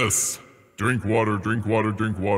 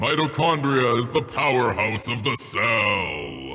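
slow broadcast announcer voice, "cell" drawn out. Saying a line someone gave to say, in a put-on announcer voice. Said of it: "let's put on the announcer voice".

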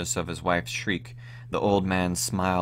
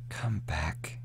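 loving, tender, gentle voice; 2 semitones lower, 7 dB quieter than usual. Reading an old man calling the weeping old woman back from the window: tender. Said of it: "he said tenderly".

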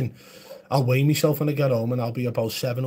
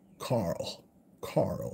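breathy, whispered character voice, breathed out; 5 semitones lower, 9 dB quieter than usual. Answering a chat question with a Walking Dead impression: Rick Grimes impression. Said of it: "That's a good impression, Rick Grimes".

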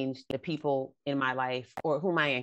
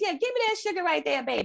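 put-on very high-pitched older lady voice; 3 dB louder than usual.

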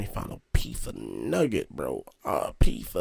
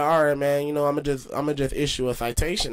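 ordinary talk

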